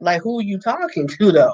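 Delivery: mock-indignant retort. Telling how the speaker answered someone yelling at them, retelling an indignant comeback. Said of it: "Like my head go around and I come back like".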